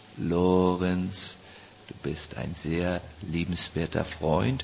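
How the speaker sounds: refined, cultivated German, one word drawn out. Contrasting ways of speaking German, addressing Lorenz in a cultured voice. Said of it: "there's a cultured voice".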